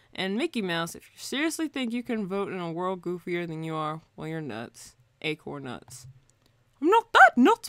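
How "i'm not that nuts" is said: loud, high-pitched squeal, done badly. Speaker answers his own jab at Mickey Mouse with a terrible Mickey Mouse impression. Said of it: "That was a terrible impression".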